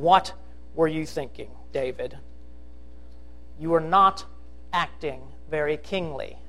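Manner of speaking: mock contemptuous tone. Speaker voices a woman scolding David, imitating her contempt. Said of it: "You can hear her contempt".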